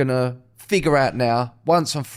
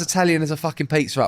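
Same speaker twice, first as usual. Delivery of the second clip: normal talking voice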